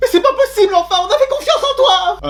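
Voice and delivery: high, loud, outraged cry.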